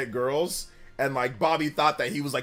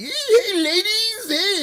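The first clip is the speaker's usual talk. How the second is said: very high, raised, swooping put-on American accent; 7 dB louder than usual. Retelling how a classmate greeted girls: imitating someone faking an american accent. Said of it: "he tried to always try to talk American".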